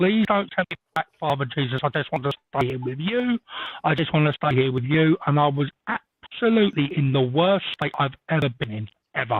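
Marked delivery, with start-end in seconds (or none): none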